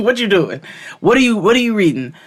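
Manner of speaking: very loud, high-pitched, prying, nosy mother voice. Retelling how a nosy mother questioned her: imitating nosy mother. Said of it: "my mother was super nosy".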